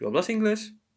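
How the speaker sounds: pitch rises at the end of inglés. Spanish lesson on asking questions, example sentence: rising tone at end on inglés. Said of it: "raise a tone, your tone at the end".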